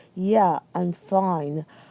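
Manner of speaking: pointedly passive-aggressive, mock tone. Recalling answering whether everything was okay: mock passive-aggressive reply. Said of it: "this passive aggressive inflection in my voice".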